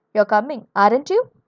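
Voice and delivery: rising tone, voice climbing on "aren't you". Explaining tag questions that confirm information, rising tone on 'aren't you'. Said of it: "the tone rises".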